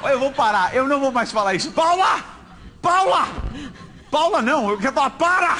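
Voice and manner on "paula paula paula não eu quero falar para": put-on insistent shouting, held back, half-shouted. Calling out to Paula to stop because you want to talk, shouted. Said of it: "Eu gritei Paula".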